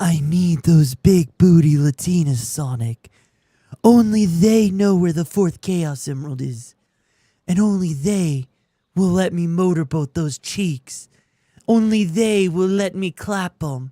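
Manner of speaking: very low character voice. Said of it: "I can go really low".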